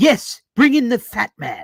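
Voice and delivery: high, loud cartoon voice with swooping pitch. Reading a fan comment aloud, in Stewie Griffin voice. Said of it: "in my best Stewie Griffin voice".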